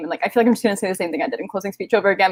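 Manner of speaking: very fast, rushed, words tumbling out quickly. A player thanking others after a game, talking very fast. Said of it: "but like I'm talking so fast".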